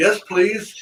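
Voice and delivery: put-on small, high little girl voice. Speaker recounts a little girl answering after the crowd's clapping, little girl's voice. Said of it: "you hear a little girl's voice go".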